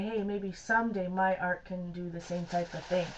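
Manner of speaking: plain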